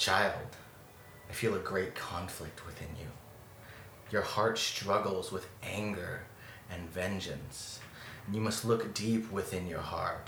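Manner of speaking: motherly, matronly voice, calling out. Narrating to a listener, voicing a voice that calls out: matronly voice. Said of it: "this matronly voice".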